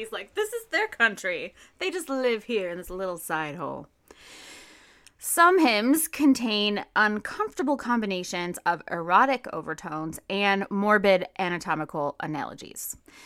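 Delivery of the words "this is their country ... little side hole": thick, heavy, mocking sarcasm. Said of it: "he's being, like, sarcastic".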